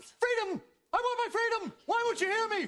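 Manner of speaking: desperate, frantic, worked-up, high-pitched pleading. Crying out to someone who keeps telling them to calm down, shouting frantically. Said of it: "would you just calm down?".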